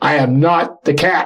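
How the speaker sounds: loud ghostly voice, very slow. Recounting a spirit's reply after they mistook it for their cat: booming Bruno Groening voice. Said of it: "This booming voice".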